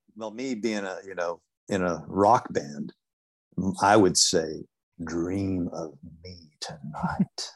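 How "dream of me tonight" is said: put-on ASMR-style performance voice. Joking about viewers falling asleep to videos: put-on ASMR voice. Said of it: "In your A S M R voice".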